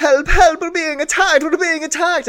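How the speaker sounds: very high, fast, panicked, broken screaming. Voicing a character banging on doors, pretending to need help: screaming for help in broken Vodachan. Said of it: "screams like he is, like, in need of help".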